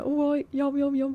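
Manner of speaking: clumsy, bad attempt at a Birmingham accent. Attempting an accent after saying it can't be done: attempted Brummy accent. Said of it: "I can't even do a Brummy accent".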